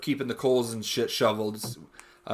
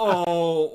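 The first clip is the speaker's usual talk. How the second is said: high little moan; 5 semitones higher than usual. Imitating another speaker's moan from moments before: imitating a moan. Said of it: "and you go".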